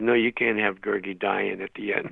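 usual speaking voice

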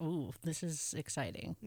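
ordinary talk

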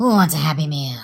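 creepy high-pitched voice. Retelling what a costumed man climbing the slide said: horrifyingly high-pitched voice. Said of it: "in his horrifyingly high-pitched voice".

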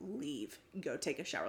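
tearful, cross, angry, near tears. Retelling a partner's line in a fight: imitating someone tearful and angry. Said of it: "lip quivering was like".

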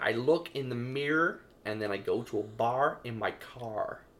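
put-on American accent. Asked by another speaker to do a woman in an American accent, the speaker uses a put-on American accent. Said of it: "You should do her in your American accent".

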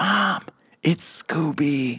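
whispering, pitched high. Retelling how a daughter in McDonald's whispered to her mom, imitating a whisper. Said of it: "she whispered".

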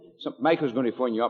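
ordinary talk

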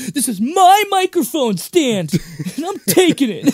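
acted, very high, loud, worked-up indignant outburst. Retelling a movie scene where a character storms into a bandmate's place: imitating an upset outburst. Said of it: "when he gets all upset".

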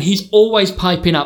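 ordinary delivery

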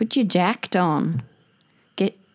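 slipping into Australian accent. Using a slang word in a sentence: slipping into Australian accent. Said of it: "sorry, I went Australian".

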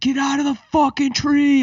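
put-on very high, loud scream. Retelling how police officers with machine guns ordered them down: imitating police screaming.

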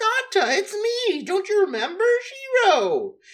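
mock, very high, loud, thrilled, overjoyed voice. Retelling a scene where a girl drops from the sky: imitating someone super happy. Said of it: "super happy to see him".

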